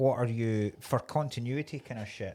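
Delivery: ordinary talk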